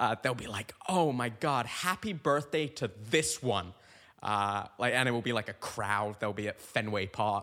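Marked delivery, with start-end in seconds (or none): 0.9-3.7 mock, played-up, slow, gushing, fawning tone. Imitating women's birthday story posts for someone: mock gushing. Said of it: "play it up as if this person is the love of their life".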